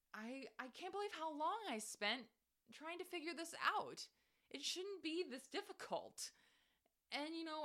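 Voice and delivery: high-pitched, exasperated ranting.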